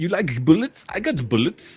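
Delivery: attempted Russian accent. Quoting a gun seller from the film in an attempted Russian accent. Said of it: "always seems to go back to Austrian".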